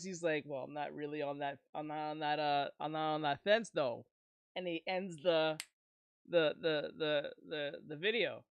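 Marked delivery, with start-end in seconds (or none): 0.5-4.1 put-on deep, disguised voice, dropped low. Retelling what a man says close to his camera, imitating a deepened voice. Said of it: "he deepens his voice".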